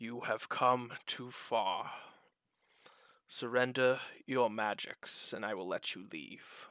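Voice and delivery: menacing, ominous disembodied voice. Voicing a hidden presence that speaks from a lightless pit: menacing voice from the darkness. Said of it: "you just hear this voice".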